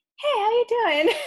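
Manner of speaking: play-acted honeyed, sugary, very high, very loud. Retelling how an opponent greets them mid-match in a headlock: imitating the sweetest voice. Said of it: "with like the sweetest voice you could possibly imagine".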